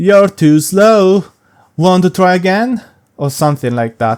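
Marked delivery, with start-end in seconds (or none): 0.0-2.8 bad put-on taunting cartoon voice, high and loud. Speaker recalls reading an on-screen message in Sonic's voice: Sonic voice. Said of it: "I almost read it as".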